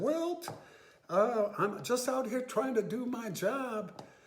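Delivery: very high, nervous voice cracking. Retelling what he said to Wilt, acting out his voice breaking. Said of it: "my voice broke".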